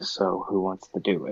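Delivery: soft, hushed leaning-in whisper. As Oberon, leaning over toward Edgar, whispering. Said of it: "lean over and whisper".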